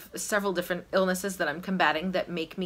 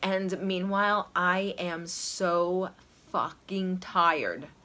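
ordinary talk

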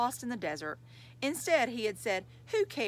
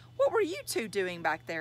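insistent, demanding tone, pressing hard. Narrating, a boy questions his toy rabbit and bear, demanding. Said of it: "He demanded".

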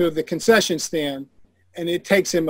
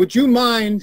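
put-on Latin American accent, pitched up; 6 semitones higher, 4 dB louder than usual. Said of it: "I'll drop the accent".

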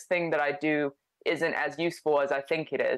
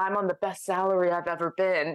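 put-on whisper; 3 semitones higher than usual. Retelling what someone said after a conference: imitating someone whispering. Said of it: "She's whispering".

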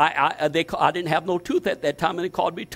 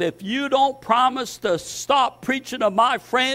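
put-on furious shouting, raised and high; 6 semitones higher than usual. Retelling how a man held him by the throat: imitating someone yelling. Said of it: "and he's yelling".

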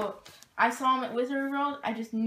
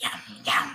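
monster creature voice; 14 semitones lower than usual. Presenting a new Gremlins piece from a vendor, in a Gremlins voice. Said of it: "Gremlins voice, spot on".

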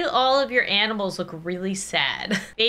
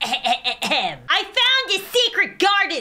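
delighted storybook cat voice, high and very slow; 10 semitones higher, 3 dB louder than usual. Reading a storybook aloud to a baby, voicing the cat: delighted cat voice. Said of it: "said the cat with much delight".

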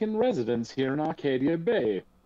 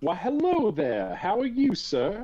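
friendly, cordial, pitched-up voice; 6 semitones higher than usual. Voicing a werewolf walking beside Jake who greets a player: friendly in-character greeting. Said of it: "nods friendly-like".

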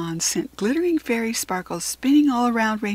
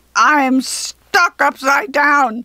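very loud, furious, enraged goblin screeching; 3 semitones higher, 8 dB louder than usual. A goblin stuck upside down in a hole, furious goblin screech. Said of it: "the goblin screeched furiously".

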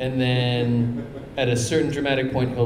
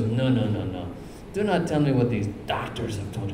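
put-on South African accent; 2 semitones lower than usual. Retelling what a doctor said to the speaker, in a put-on South African accent. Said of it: "I can't do a South African accent".

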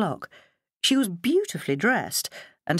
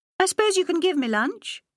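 uncertain, doubtful, hedging, very high pitch; 11 semitones higher than usual. Narrator voicing Lottie ringing up to come to lunch, doubtful. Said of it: "she said doubtfully".

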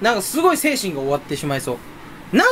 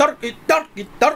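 high, rattled-off fast talking. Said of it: "早口で喋っていけばいいんだよね".

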